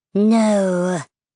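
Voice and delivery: hoarse, raspy creature voice. Narrator reads a creature's single word to the fleeing narrator, raspy creature voice. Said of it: "the creature said in a raspy voice".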